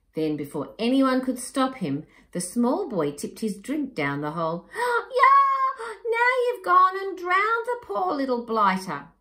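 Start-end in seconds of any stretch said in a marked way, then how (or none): 4.7-9.0 very high, loud shout. The young man with long arms reacts to a boy tipping a drink down the hole, shouting. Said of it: "shouted the young man with the long arms".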